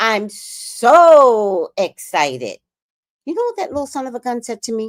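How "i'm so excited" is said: normal talking voice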